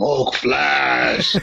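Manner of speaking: put-on monster voice. Answering a quiz clue as the rules require: Hulk impression. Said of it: "in your best Hulk impression".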